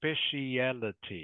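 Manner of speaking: "speciality" laid out slowly, carefully and deliberately. Repeating a new word for a learner: slow, careful speciality. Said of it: "I'll say it slowly".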